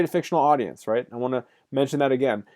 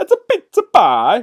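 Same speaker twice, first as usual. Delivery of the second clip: put-on Italian accent; 9 semitones higher, 9 dB louder than usual. Explaining a word with a pizza example: stereotypical Italian accent. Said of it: "that's my best Italian accent".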